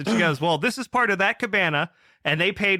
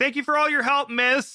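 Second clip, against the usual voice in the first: loud, pitched-up, mocking delivery; 8 semitones higher than usual. Retelling someone thanking the manager on the way out: imitating someone saying it loudly. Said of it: "really loud as she's going away".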